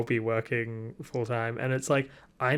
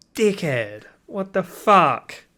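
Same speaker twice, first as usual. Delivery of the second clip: bit of Australian accent slipping out, raised pitch; 7 semitones higher, 8 dB louder than usual. A speaker vents about someone he once found cool, Aussie accent slipping out. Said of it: "my Aussie came out there a bit".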